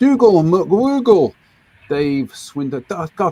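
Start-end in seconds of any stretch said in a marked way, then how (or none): 0.0-1.4 jokey, high, loud, put-on Scottish accent. Reading out viewer names in hellos: put-on Scottish accent. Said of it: "I keep doing that voice every time you come on".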